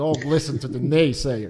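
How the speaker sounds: put-on Austrian accent. Quoting a man's rule about naysayers, imitating his accent. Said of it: "And he has, like, that accent".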